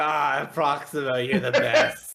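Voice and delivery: put-on acting very drunk. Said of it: "you can tell I'm totally sloshed".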